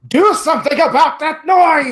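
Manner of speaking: enraged, furious, very high shrieking shout. Voicing a character slashing at another in fury: in-character furious shout. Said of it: "as he draws his rapier in fury".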